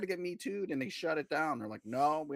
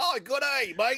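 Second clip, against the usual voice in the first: very high, loud fake British accent, sounds Australian; 11 semitones higher, 8 dB louder than usual. Joking about british spies blending in, fake british accent that sounds australian.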